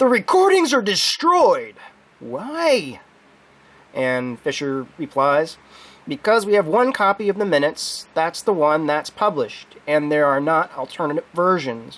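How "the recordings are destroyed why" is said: acted booming, outraged voice, swooping pitch, "why" stretched. Recounting an exchange about recordings, the speaker voices the questioner: retelling a booming, outraged voice. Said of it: "Tyree says in a booming, outraged voice".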